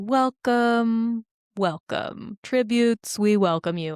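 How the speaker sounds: very slow, commanding proclamation with total authority. Recapping a scene, the speaker delivers the welcome to the tributes imitating Snow's commanding voice. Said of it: "it's such a commanding voice".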